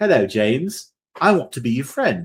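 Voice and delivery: put-on sweet little British five-year-old kid voice. Recapping a scene where a walking doll talks to James, sweet five-year-old British kid voice. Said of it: "It's like a five-year-old British kid".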